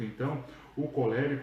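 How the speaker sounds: ordinary talk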